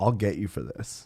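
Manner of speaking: dead-serious, composed, calm delivery kept soft. Retelling what a man said after slapping away a helping hand, imitating a calm, serious threat. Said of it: "he looks at me seriously and calmly".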